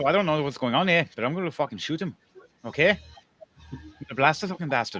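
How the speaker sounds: put-on Irish accent, Irish brogue. Voicing a character cocking his rifle and threatening to shoot: irish accent. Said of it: "That's Irish".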